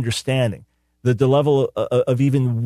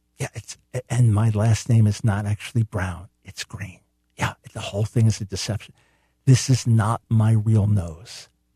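close-mic, mock-secretive confiding, slower; 3 semitones lower than usual. Asking viewers if they can keep a secret, then leaning close to the mic. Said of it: "I'm going to lean in real close to the mic".

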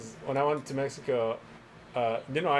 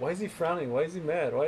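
ordinary talk, nothing marked

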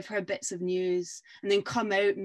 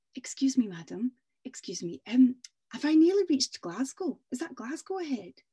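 put-on, courteous, polite, lifted tone; 5 semitones higher than usual. Telling a folk tale, a rider asking the way: polite. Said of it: "this time it's a polite cough".

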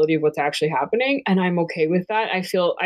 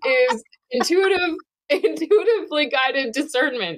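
very high, slow, giddy, giggling through the words; 9 semitones higher than usual. Restarting a stumbled explanation of discernment: excited, laughing while talking. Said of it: "I can't talk. I'm just so excited".

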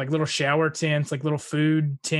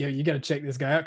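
ordinary delivery

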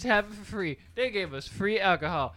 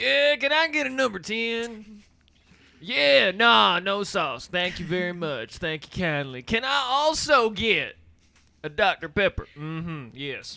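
put-on country accent, spoken louder; 4 dB louder than usual. Ordering at a drive-thru where staff couldn't hear, Larry the Cable Guy impression. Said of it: "it came out as a country accent".

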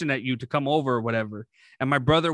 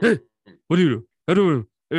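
fast, raised, grunting, mumbly voice; 3 semitones higher, 6 dB louder than usual. Imitating a man nobody understands because he mumbles, fast mumbly voice. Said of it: "he talks really fast and mumbly".

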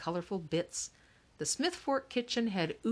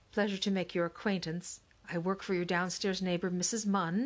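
ordinary delivery

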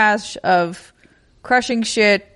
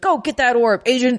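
put-on kindly, urging friendly yell; 3 semitones higher than usual. Describing a game character who talks to the player; imitating a kind yell. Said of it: "yelling at you basically in a kind way".

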